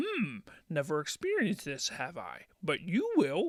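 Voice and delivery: animated character voice with pitch swooping all over. Reading an interview quote aloud, acting out Yoda's reply: Yoda voice. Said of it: "That's my Yoda voice".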